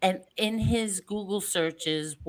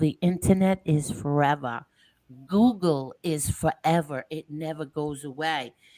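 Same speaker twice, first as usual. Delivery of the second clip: slow, unhurried, deliberate weight on each word; 3 semitones lower than usual. Addressing people listening on the show, slowing the voice down. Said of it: "I love the way you slow your voice down".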